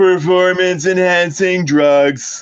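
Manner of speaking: put-on heckler voice. Imagining a former president heckling at an inauguration: Trump impersonation. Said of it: "this is a Trump impersonation".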